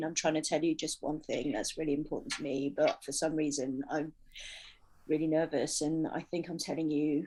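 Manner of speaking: low, gravelly, nervous monotone drone with no inflection. Demonstrating how a nervous speaker's delivery sounds, nervous monotone. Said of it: "you have this kind of monotone feeling".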